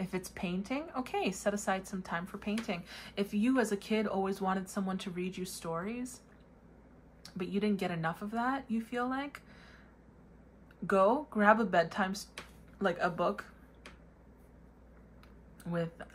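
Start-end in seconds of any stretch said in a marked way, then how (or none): 10.9-15.9 hiccuping, slower. Talking to viewers while interrupted by hiccups. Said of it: "I have hiccups".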